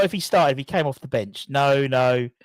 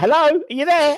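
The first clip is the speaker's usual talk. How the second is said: very high, loud, raised calling-out voice; 12 semitones higher, 5 dB louder than usual. Retelling trying to FaceTime a mother-in-law: imitating mother-in-law on FaceTime. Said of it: "She's like".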